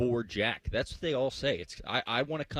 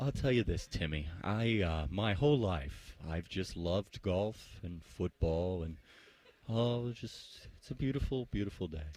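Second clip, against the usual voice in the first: hushed, soft-spoken, quieter and lower; 5 semitones lower, 4 dB quieter than usual. Answering Timmy's question about wanting to be a sportscaster, talking quieter. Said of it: "So I'll I'll talk quieter".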